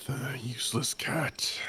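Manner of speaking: whispering under breath. Speaking in character during a game scene: whispering under breath. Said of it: "Just whispering, just whispering under my breath".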